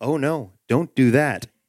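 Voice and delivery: ordinary delivery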